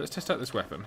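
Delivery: normal talking voice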